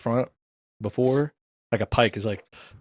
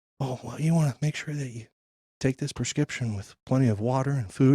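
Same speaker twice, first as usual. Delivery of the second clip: hushed, discreet, confidential stage whisper; 2 semitones higher, 4 dB quieter than usual. Retelling how the drugstore lady gave prescription advice: imitating someone half-whispering. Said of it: "whispering it to me".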